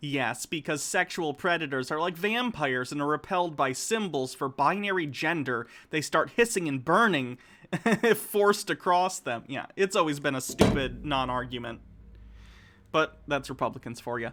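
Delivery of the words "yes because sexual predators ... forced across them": plain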